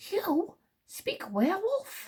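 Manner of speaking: deeply impressed. Reading a story, voicing Wish asking about speaking werewolf: deeply impressed. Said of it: "asked Wish, deeply impressed".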